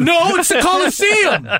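very high, shrill, drawn-out scream. Correcting another speaker's wrong answer about the stadium: screaming. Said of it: "Why are you screaming, man?".

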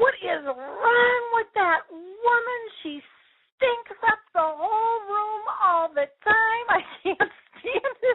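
piercing, shrill, very high scream. Retelling a mother's outburst about a roommate's odor: imitating someone screaming. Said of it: "my mom just screamed out".

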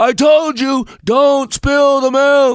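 very high, exasperated, drawn-out scolding yell. Explaining how adults react when a child spills milk, mock yelling at a child. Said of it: "I got a little loud there".

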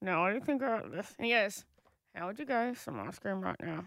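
side-mouthed talk, from the corner of the mouth. Retelling what a mate said, talking out of side of mouth. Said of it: "talks from out of the side of their mouth".

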